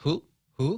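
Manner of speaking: high owl-like hoot on who. Joking around on air after a caller: hooting like an owl. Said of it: "You sound like an owl".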